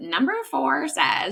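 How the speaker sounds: high, silly, zany put-on joking voice. A stepparent joking around with their stepson, in a crazy voice. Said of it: "like in this crazy voice".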